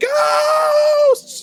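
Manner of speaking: loud screaming voice. Voicing the laborer among skeletons: laborer screaming. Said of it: "the laborer is screaming".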